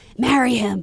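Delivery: high theatrical whisper. Retelling what someone said leaning in: imitating a stage whisper. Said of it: "he leaned in in a stage whisper and said".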